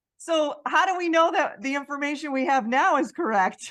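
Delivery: loud sarcastic joking. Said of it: "I'm being sarcastic".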